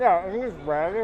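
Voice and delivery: talking with mouth full. Tasting a dish and guessing an ingredient, talking with mouth full. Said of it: "Couldn't talk with my mouth full".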